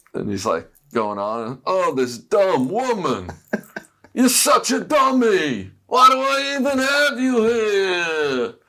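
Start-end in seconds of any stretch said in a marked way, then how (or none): 1.6-8.5 very high, slow, drawn-out berating yell, rising in pitch. Retelling how a man yelled at Eleanor about the suitcases, retelling a yell. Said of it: "he starts yelling at Eleanor".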